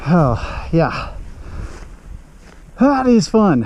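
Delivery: short of breath, panting and winded. Speaker reacts to the powerful machine he just used, out of breath. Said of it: "I am out of breath".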